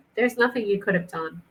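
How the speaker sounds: ordinary delivery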